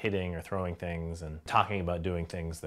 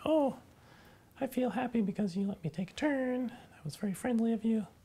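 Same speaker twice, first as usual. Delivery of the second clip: very high little animal voice. Speaker shows how she voices the animal after it is let take a turn. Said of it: "with the voice of the animal saying".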